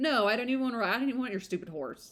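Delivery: put-on sarcastic tone laid over the words. Acting out the character's refusal as a joke: put-on sarcastic tone. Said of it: "sarcastically, like".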